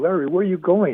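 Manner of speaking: very high, loud yelling. Running out the salon door, the receptionist yells after him, retelling a receptionist's yell. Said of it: "the receptionist yells at me".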